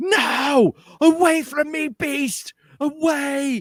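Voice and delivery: put-on very high, shrill old woman scream, no drawn out. Narrating a scene to a listener, voicing an old woman: old woman screaming. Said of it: "you hear this old woman just start screaming".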